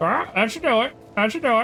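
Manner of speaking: high, squawky, mocking parrot-like echo. Echoing the other speaker's words back at him: squawking mock imitation. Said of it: "I decided to squawk at you like that".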